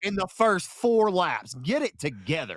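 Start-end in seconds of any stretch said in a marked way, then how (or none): 1.5-2.6 exaggerated on purpose, over the top. Speaker complaining about a race with eight early cautions, over the top. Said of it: "being a little over the top".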